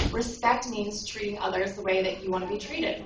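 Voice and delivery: ordinary talk, nothing marked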